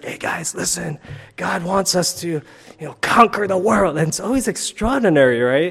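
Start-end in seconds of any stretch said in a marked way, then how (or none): 0.0-4.0 raspy, rasping stage-speaker voice. Imitating a speaker at a recent men's conference: imitating a raspy voice. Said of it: "It's really, like, raspy".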